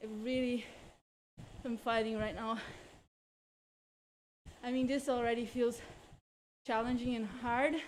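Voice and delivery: winded, out of breath. A cyclist talks while riding, out of breath. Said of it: "I'm like out of breath".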